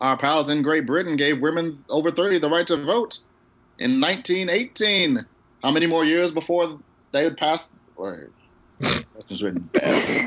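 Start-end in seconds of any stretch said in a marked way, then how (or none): 0.0-7.7 put-on high-pitched old-time announcer voice. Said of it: "my old time announcer voice".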